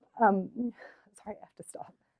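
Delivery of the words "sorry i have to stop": much softer, breaking up, choked with tears. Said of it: "I can't believe I'm getting emotional".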